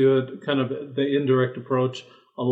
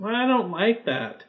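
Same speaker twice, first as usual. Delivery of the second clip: put-on small child voice, much higher; 7 semitones higher than usual. Recounting what children said at mealtimes, imitating a small child. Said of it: "That was an amazing impression of a small child".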